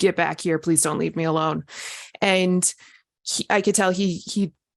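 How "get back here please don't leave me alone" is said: put-on worried, scared pleading voice. Retelling calling out to a companion far down the street: imitating a worried plea. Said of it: "he could hear it in my voice".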